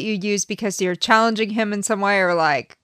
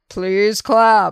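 public address announcer voice, as over a loudspeaker. Imagining the person speaking over the building's pa system: pa announcer voice. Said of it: "the big voice that comes out over the whole building".

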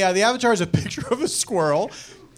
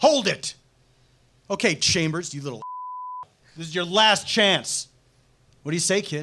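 theatrical, played-big dramatic reading with swooping pitch; 3 dB quieter than usual. Reading a scene from a summer film aloud with others: dramatic reading. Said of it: "we're doing a dramatic reading".

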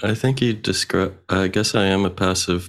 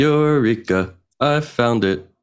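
very slow, high, sage-like philosopher voice; 5 semitones higher than usual. Saying the phrase when asked to, like a philosopher. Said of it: "I'm supposed to say it like a philosopher?".

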